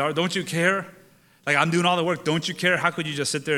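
aggrieved, upset, put-upon complaining tone. Retelling Martha's complaint to Mary from Luke chapter ten: imitating upset Martha. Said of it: "Martha finally gets upset at Mary".

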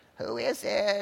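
put-on cracked, crackly, called-out old woman voice. Reading a story aloud, the wolf in bed calls out: crackly voice. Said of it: "he called in a crackly voice".

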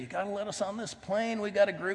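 play-acted, high, testy, bad-tempered tone. Retelling pleading with the attendant as the plane door closes: retelling his own yelled plea. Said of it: "my attitude wasn't real good".

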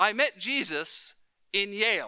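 put-on thick Cuban accent. Retelling a man's answer to a sister at a church function, imitating Manny's thick Cuban accent. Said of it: "Manny has a very thick Cuban accent".

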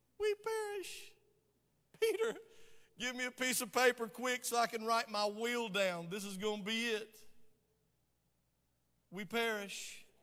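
put-on effeminate voice and manner. Retelling verse 24 where they wake the Master, mock sissy-like voice. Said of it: "he said it with a sissy-like voice".

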